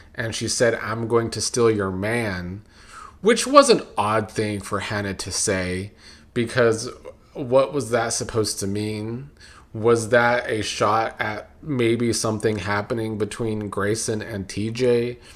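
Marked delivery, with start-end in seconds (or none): 0.7-2.6 put-on country accent impression. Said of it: "She gave the country accent".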